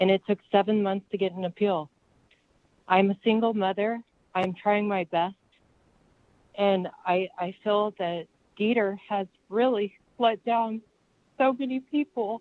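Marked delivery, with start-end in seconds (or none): 2.9-12.4 crying, tearful voice breaking through the words. A single mother describing a seven-month wait for an appeal, crying. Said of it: "I'm crying".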